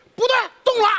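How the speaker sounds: high, startled yelp.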